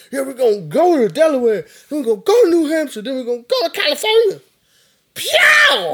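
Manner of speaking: very high, swooping, climbing, loud excited put-on shout. Act out the candidate everybody hated for saying "pyaw", imitating an excited candidate. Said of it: "he was so excited".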